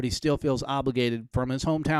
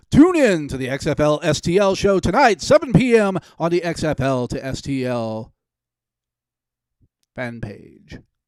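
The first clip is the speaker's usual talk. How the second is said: very loud, booming radio announcer delivery; 3 semitones higher, 9 dB louder than usual. Promoting tonight's live show to viewers, in a radio announcer voice. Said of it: "if I used my radio voice".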